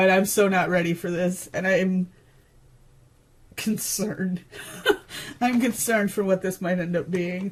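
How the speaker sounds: low, hushed voice, fighting back tears. Speaker reacting to what is coming next, holding back tears. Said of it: "I'm trying not to cry right now".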